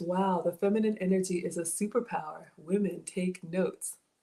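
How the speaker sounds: plain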